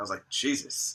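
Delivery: ordinary delivery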